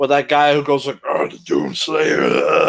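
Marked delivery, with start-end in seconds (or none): 1.0-2.7 very low, rough, gravelly voice. Asking the others about a voice in a game, imitating a gravelly voice. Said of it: "that gravelly voice in Doom twenty sixteen".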